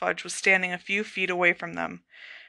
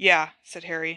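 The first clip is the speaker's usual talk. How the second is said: usual speaking voice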